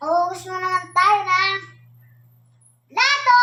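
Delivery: high, loud shout. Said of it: "Nasigaw na ako".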